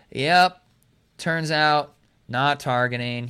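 mock sad, deflated. Speaker mimics referees announcing a no-targeting call, imitating sad-sounding referees. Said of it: "they sounded almost sad".

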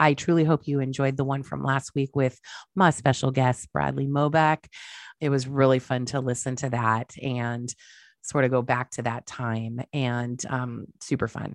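worn-out, ill-sounding voice.

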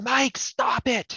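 acted, very high yelled voice. Retelling a night a brother was thought to be pranking: retelling own yelling. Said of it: "So I yelled".

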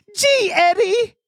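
very high-pitched, zany cartoon voice. Debuting his new impression for the others on the show: Roger Rabbit impression. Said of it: "I'd like to debut my Roger Rabbit impression".

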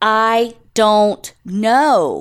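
very slow, drawn-out, frustrated, fed-up delivery.

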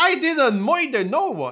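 put-on Boston accent. Reading a script line after being told how it should be said; Bostonian Gotham accent. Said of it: "said with a Bostonian Gotham accent".

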